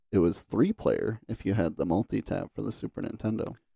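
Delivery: ordinary talk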